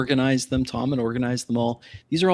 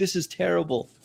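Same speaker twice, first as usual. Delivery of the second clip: absolute panic, pitched up; 6 semitones higher than usual. Pointing at his own face, retelling that moment: retelling own panic. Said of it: "That is me absolutely panicking".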